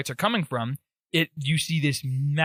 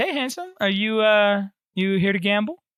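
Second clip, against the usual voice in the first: higher-pitched woman's voice; 6 semitones higher, 3 dB louder than usual. Voicing a woman who greets the players at a gambling hall: voicing a woman character. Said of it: "the woman just waves at you and she goes".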